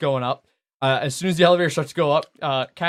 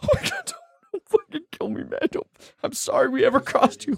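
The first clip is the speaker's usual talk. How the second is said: very high-pitched, tearful, sobbing voice; 12 semitones higher than usual. Narrator voices a guard found crying with his gun on the ground, crying plea. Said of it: "his gun on the ground, like crying".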